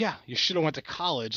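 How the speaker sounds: play-acted spiteful, nasty delivery. Retelling what a customer said again, imitating a nasty retort.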